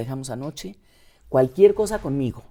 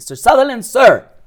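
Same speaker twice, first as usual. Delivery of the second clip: put-on calling out, higher and louder; 8 semitones higher, 12 dB louder than usual. Retelling calling out to Mister Sutherland: retelling a loud call. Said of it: "con volumen de voz le dije".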